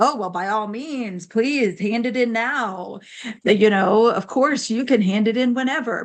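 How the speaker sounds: slow, heavily sarcastic, falsely generous teacher voice. Retelling what a teacher told a student about late homework: imitating a teacher being sarcastic. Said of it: "being, like, sarcastic".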